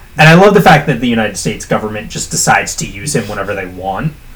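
fast, thick, biting sarcasm. Recapping a story about a government strike team: very sarcastic. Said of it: "I'm saying that very sarcastically".

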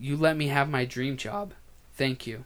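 soft voice, catching and cracking. Thanking everyone for letting the speaker have a dream job, voice cracking. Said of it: "My voice just cracked".

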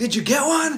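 very high shouted call, as if across distance. Retelling a hunt where the speaker's dad yells over at them; imitating dad yelling. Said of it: "my dad yells at me like".

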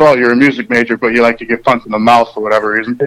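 ordinary talk

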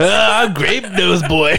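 very slow character voice, every word drawn out. Teasing another speaker's impression by doing Ed from Good Burger voice. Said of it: "you sounded like fucking Ed from fucking Good Burger".

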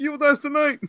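very high, nervous, dorky yell. Retelling a movie scene, imitating Tommy Doyle nervous and dorky. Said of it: "turns his head all nervously and throws his fist in the air like a dork and goes".

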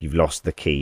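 ordinary delivery

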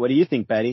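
usual speaking voice

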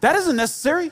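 mock, spoken right out. Retelling Jesus answering loud enough for the crowd: imitating speaking out loud. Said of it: "speak real out loud".

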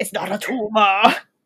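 put-on loud voice with strong Austrian accent. Quoting a Kindergarten Cop scene where he answers the kid, in an Arnold Schwarzenegger impression. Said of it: "what an amazing accent that was".

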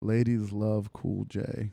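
slow, flat deadpan, each word landing slowly.

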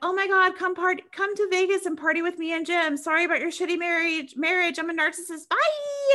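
high, gushing, self-absorbed chirp. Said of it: "she's like".

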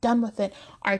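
ordinary delivery, nothing marked

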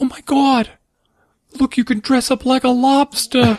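acted-out, very high-pitched, astonished, shocked outburst. Retelling a mother picking up a little lobster costume, imitating her shocked exclamation. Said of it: "She was so shocked".

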